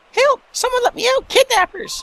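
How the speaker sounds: put-on, squeaky, very high cartoon character voice. Playing a taped-up captive shouting from in there, in a put-on cartoon character voice. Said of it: "I'm not going to be able to do that voice for very long".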